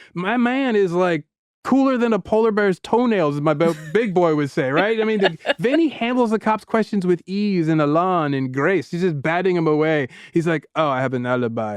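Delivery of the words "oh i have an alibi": deep, low-pitched fake French accent. Recapping a scene where Vinny answers a cop's questions, in a fake French accent. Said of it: "a fake French accent".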